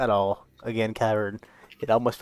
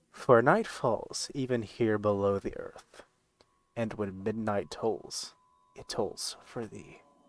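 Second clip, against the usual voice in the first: soft, hushed, murmured delivery; 5 dB quieter than usual. Game narrator voicing Halester addressing his contestants, in Halester's hushed voice. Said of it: "he says in like this hushed tone".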